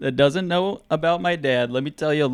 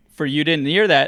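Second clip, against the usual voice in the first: plain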